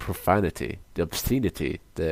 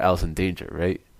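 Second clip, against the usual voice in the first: usual speaking voice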